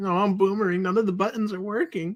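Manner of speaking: nervous, worried, on-edge voice. Retelling feeling nervous on the last stream: imitating own nervous self. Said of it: "I was just so nervous".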